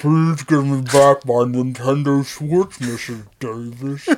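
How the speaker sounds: very low, deep giant voice. Imagining a very tall kid asking Mrs. Davis for his Switch back, Gheorghe Muresan giant voice. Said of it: "that giant like George Murasan voice is like".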